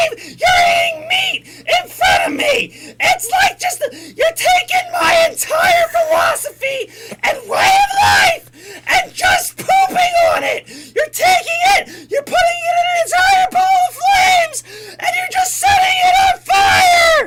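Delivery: angry rant, very high-pitched and very loud. Commenting over a video and voicing a character, very high-pitched voice. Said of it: "My voice get any higher?".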